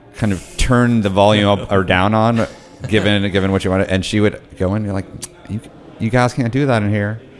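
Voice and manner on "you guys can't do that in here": put-on Texan drawl. Imitating a woman telling people off, in a put-on Texas drawl. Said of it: "forgive my my impersonation".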